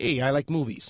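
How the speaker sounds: usual speaking voice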